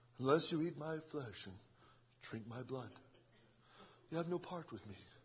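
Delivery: English accent, deep, very hushed murmur. Mocking how they portray the Lord, quoting Jesus with an English accent. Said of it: "They got your English accent on the Lord".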